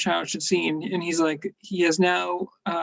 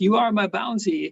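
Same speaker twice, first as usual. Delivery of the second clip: terrible put-on French accent; 3 semitones higher than usual. Retelling a robot's line from a cartoon: terrible French impersonation. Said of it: "that was a terrible French im-, impersonation".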